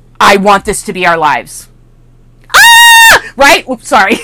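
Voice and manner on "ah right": very high, loud, stretched-out whoop of excitement. Speaker talking to an audience suddenly breaks into an excited yell. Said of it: "Sorry, I yelled a little there".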